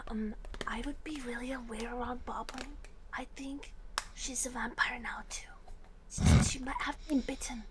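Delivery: hushed stage whisper, carrying to everyone. A character whispers a warning to another within everyone's hearing, loud stage whisper. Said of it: "she whispers uh, again, really like loudly, so everyone can hear".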